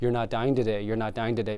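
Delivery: ordinary talk, nothing marked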